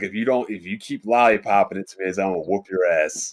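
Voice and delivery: ordinary talk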